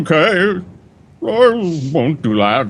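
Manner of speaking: very drawn out, slow, high octopus creature voice. Voicing a doppelganger answering a threat: octopus-like voice. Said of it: "He sounds like a, what I imagine a, an octopus would sound like".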